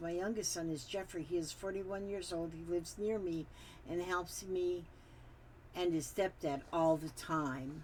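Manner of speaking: ordinary talk, nothing marked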